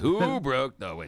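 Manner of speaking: serious, radio-style announcer dad voice. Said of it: "And then it's the big announcement".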